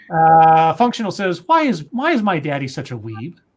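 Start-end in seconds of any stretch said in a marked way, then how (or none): none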